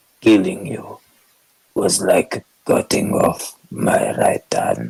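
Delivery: deep, gruff, throaty voice, slow and rough. Demonstrating how he voiced the line: Garrick voice, from back of throat. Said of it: "like to the back of my throat".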